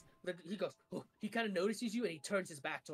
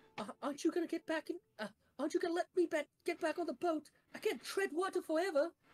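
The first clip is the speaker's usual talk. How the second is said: very high, bad put-on little girl voice; 9 semitones higher than usual. Player getting into character calls up to the others on the boat, bad little girl voice. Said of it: "Keep it like that".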